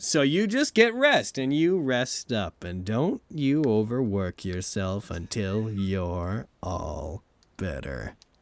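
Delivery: very slow, sinister, menacing, swooping voice. Telling a recovering party member to rest, in character: sinister voice. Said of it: "So you did it again".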